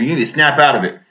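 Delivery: ordinary talk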